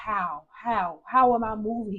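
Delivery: put-on, very slow, drawn-out, exasperated, frustrated tone. Retelling own questions to the Lord: retelling own frustrated questioning. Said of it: "I would be so frustrated with the Lord".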